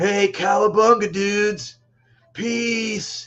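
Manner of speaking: slow surfer dude drawl, "peace" stretched long. Imagining a little gecko talking: surfer dude voice. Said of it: "I imagine him talking like a surfer".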